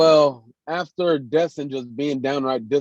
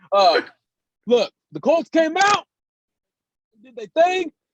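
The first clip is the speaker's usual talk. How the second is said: very high, loud, talking as through a burning mouth; 10 semitones higher, 3 dB louder than usual. Speaker back with his friends, talking about the colts, loud with mouth on fire. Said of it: "the only reason why I'm talking so loud is because my mouth is on fire".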